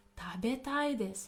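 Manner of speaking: usual speaking voice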